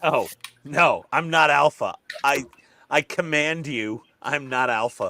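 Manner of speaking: put-on aggressive voice. Imitating another speaker denying being alpha: imitating someone in an aggressive tone. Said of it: "this aggressive tone when you imitate me".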